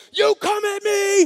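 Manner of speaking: wild, very high, drawn-out passionate scream. Imagining a crazy passionate fighter taunting his opponent, retelling a scream. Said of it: "he's like screaming and jumping up and down".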